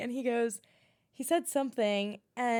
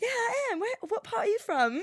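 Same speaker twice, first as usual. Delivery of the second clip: very high-pitched put-on British accent; 10 semitones higher than usual. Retelling chatting with a man's buddy, the speaker answers in a fake British accent. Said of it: "I started talking to him in my British accent".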